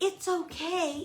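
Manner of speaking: mock cheery happy voice. Imitating how people reassure a fearful dog: imitating a soft, happy voice. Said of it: "in this soft, happy voice".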